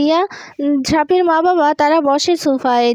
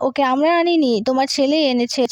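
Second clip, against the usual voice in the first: usual speaking voice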